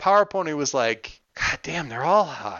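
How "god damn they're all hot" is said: acted-out muttering under the breath. Speaker recounts a woman's remark about the others, under her breath. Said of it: "Just kind of under her breath".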